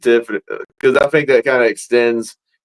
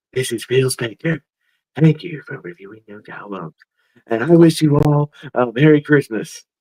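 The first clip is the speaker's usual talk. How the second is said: strange, eerie put-on voice; 2 semitones higher than usual. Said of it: "now you gotta do it in his weird, creepy voice".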